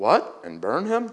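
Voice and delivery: slow, unsure, unconvinced, doubtful tone. A listener reacts to a suggested punishment: said doubtfully. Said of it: "Joe said doubtfully".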